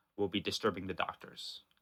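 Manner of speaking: very dry, well-rehearsed, practiced delivery. Voicing a character who is keeping it together: very dry, practiced tone. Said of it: "says very dryly, very practiced".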